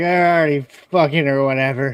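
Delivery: mock, slurred-sounding put-on drunk voice. Joking about what they would say when hammered: imitating drunk speech. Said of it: "Got all hammered and be like".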